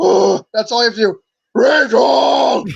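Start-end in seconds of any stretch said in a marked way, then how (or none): 1.5-2.6 put-on breathy superhero voice, higher. Showing another speaker how to do the Batman voice: breathy Batman voice. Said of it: "just breathe out".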